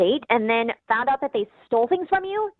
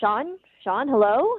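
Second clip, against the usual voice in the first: voice calling out. Retelling calling out to a guest at five a m: imitating calling out a name. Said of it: "So I called out".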